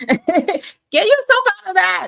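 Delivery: all-out loud, high swooping scream. Urging listeners to stop assuming they are unwanted: screaming. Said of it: "sorry if I sound like I'm, I'm screaming".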